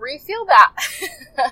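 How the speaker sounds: slow, emotional laughing through tears. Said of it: "I'm getting a little emotional".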